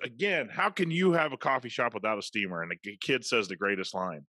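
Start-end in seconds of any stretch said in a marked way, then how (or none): 0.0-2.6 angry, irate ranting. Retelling a customer's complaint to a coffee shop worker: imitating an angry rant. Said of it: "She goes".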